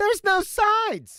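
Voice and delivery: put-on voice, pitched way up, very high. Repeating a line when asked to go higher: even higher put-on voice. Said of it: "Can it any higher?".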